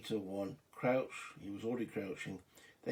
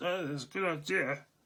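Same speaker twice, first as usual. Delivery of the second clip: terrible fake German accent, high and loud; 7 semitones higher, 6 dB louder than usual. Narrating a game turn, voicing a German soldier; bad German accent. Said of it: "that was the worst German accent on the planet".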